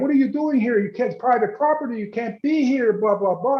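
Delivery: fast, high-pitched screaming. Retelling the manager rushing out at the driveway: imitating someone screaming. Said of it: "he starts screaming at".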